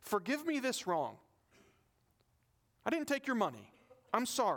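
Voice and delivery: play-acted, insincere, sarcastic tone with swooping pitch. Retelling what Paul says about not taking money: sarcastic apology as Paul. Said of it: "sarcastically says".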